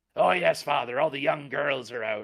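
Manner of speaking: loud, creepy put-on accent. Saying a line about young girls in a creepy put-on voice. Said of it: "I have to say it in a creepy fucking accent".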